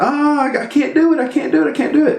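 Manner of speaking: put-on very high, upset, whining child voice. Retelling the younger brother dying in a game: imitating an upset kid. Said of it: "He gets real upset".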